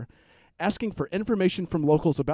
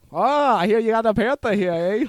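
bad Boston accent, loud, high, drifting Canadian; 5 semitones higher, 7 dB louder than usual. Asked for more Massachusetts accents, the speaker tries one, in a bad Boston accent. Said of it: "Boston by way of Ontario".

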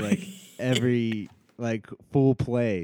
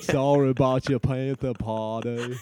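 put-on slow Southern movie-style voice. Showing that a real voice sounds like Forrest Gump: Forrest Gump voice. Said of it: "my real voice is like Forrest Gump".

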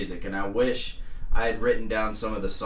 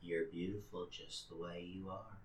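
creepy put-on kindly voice, lower and quieter; 3 semitones lower, 19 dB quieter than usual. Imitating Mister Rogers the way a comedian might have, creepy: Mister Rogers voice. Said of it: "incorporated a little Mister Rogers".

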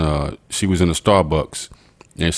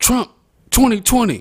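mock scream, much higher pitched. Retelling what a woman screamed on her way out; retelling a scream. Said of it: "she screamed".

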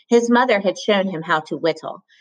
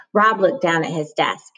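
ordinary delivery

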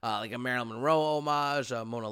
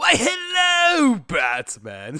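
shrill, loud, swooping villain voice, stretched "hello"; 12 semitones higher, 11 dB louder than usual. Retelling how you walked up and greeted him as Batman, do a Mark Hamill Joker impression. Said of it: "I do a very good Mark Hamill Joker impression".

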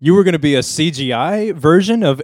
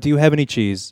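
ordinary delivery

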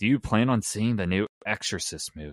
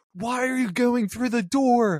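put-on very high voice, almost screaming; 4 dB louder than usual. Telling how they reacted watching a horror movie with parents, retelling a near-scream. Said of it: "I was like almost screaming at that point".

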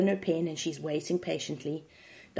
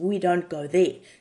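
normal talking voice

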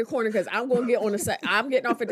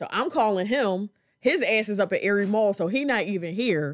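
usual speaking voice

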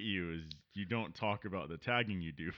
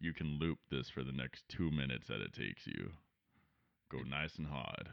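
very deep, put-on sultry bedroom murmur; 9 semitones lower, 7 dB quieter than usual. Offering the listener a voice to loop, in a fake deep sexy voice. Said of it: "deep, sexy voice to beat off to".

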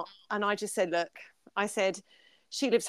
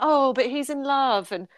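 mock very sarcastic tone, louder, slower; 5 semitones higher, 8 dB louder than usual. Retelling what she said to her husband, very sarcastically. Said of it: "very sarcastically went".

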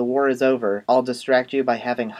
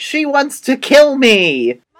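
piercing, shrill scream at full volume; 12 semitones higher, 9 dB louder than usual. Recounting a frightening scene, acting out what someone yelled; retelling a yell. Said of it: "she's just yelling like".

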